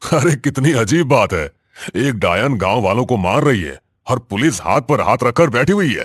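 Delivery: carefree mocking tone. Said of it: "हंसमुख, बेफिक्र और हर चीज का मजाक उड़ाने वाला".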